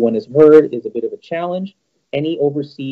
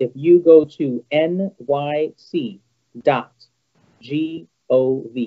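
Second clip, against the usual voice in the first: very slow, deliberate, each letter drawn out carefully. Spelling out a resource for anyone listening, very slow. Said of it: "I'm just going to say this very slowly".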